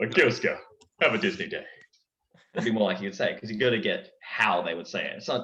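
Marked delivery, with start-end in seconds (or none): 0.0-1.6 animated character voice with pitch swooping all over. Explaining how a cartoon character would phrase a line, in Kronk voice. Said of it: "It's Kronk's voice".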